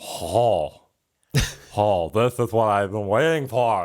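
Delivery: put-on alien creature voice. Voicing a ghost character after a dance roll: Zoidberg voice. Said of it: "She's like Fat Zoidberg voice-wise".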